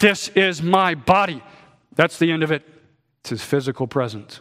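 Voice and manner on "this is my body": play-acted booming, loud, drawn-out, very slow delivery. Retelling what a reformer would say at every meeting, retelling a loud declaration. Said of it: "Luther would say in a loud voice".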